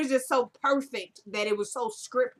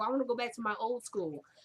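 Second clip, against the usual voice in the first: plain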